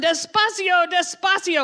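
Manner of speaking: urgent hurried yelling. Retelling a man yelling at a taxi driver to hurry up, retelling a yell. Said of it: "And I'm yelling".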